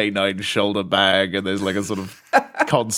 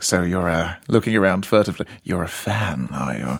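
suggestive, insinuating, predatory, suspicious-sounding voice; 3 semitones lower than usual. Retelling what a guy said during an encounter: predatory Terry-Thomas voice. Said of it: "my default predatory Terry Thomas voice".

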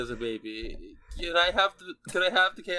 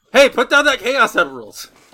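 very loud, high-pitched shouting; 6 semitones higher, 14 dB louder than usual. Calling out to a robot in the game: shouting at the robot. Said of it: "I wanna go".

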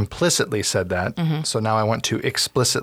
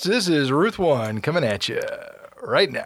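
big, pitched-up radio announcer voice; 5 semitones higher than usual. Opening the Yamcast podcast episode: big radio announcer voice. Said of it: "That's my big radio voice".

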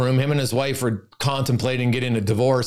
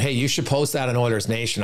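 normal talking voice

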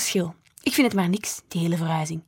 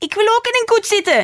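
piercing shriek, very high and loud; 8 dB louder than usual. Narrating a character's line in a story, shrieked. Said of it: "gilde Noor".

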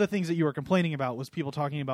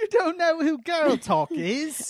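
put-on British accent, very high, slow, drawn out; 12 semitones higher, 4 dB louder than usual. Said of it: "You just sounded British".

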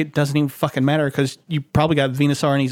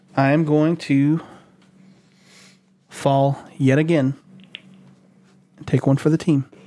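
sounding defeated and resigned. Agreeing to cut Bulbasaur from the list, sounding defeated. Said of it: "You sound so defeated about it".

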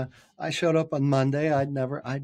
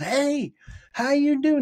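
put-on very high shrill screaming; 12 semitones higher than usual. Retelling an early morning phone call from a caller: imitating someone screaming on the phone. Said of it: "He's screaming on the phone".

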